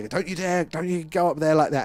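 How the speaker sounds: bad, barely Irish accent, shrill and loud. Retelling a video of a man chasing a sheep, doing a poor Irish accent. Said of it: "It wasn't even an Irish accent".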